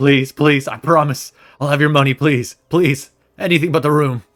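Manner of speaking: very loud, high-pitched, desperate tone. Voicing a man dragged away by bugbears: begging desperately. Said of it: "he's just, like, begging".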